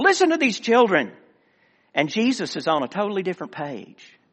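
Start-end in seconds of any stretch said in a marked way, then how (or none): 0.0-1.1 high, indignant, scornful scoff. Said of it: "Can you just imagine the inflection, the tone?".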